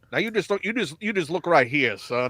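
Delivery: weird cartoon rooster voice. Imitating Tom Hanks's accent in the Elvis movie: Foghorn Leghorn voice. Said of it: "He's Fo-, Foghorn Leghorn".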